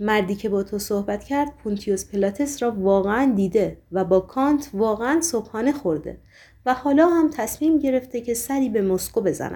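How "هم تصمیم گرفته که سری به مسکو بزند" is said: plain reading voice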